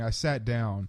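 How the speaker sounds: plain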